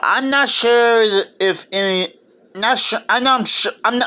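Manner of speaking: stuttering over words. Starting to introduce a Christmas movie, stuttering. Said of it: "sorry about the stuttering".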